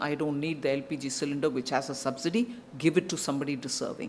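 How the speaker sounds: low, soft, quick delivery.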